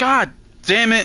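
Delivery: shrill, very high, loud, exasperated frustrated scream. Gamer reacts in the middle of a game, screaming. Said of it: "So that wasn't a Scream of Victory".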